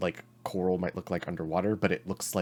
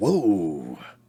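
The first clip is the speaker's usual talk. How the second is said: loud, startled but laid-back, cool whoa. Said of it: "Daisy's scream comes out as".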